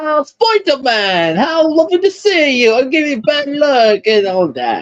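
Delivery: put-on Transylvanian accent, very high-pitched. Fan discussing a voice actor's roles, doing Anti-Cosmo with a Transylvanian accent. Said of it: "I'm sorry to give him a Transylvanian accent".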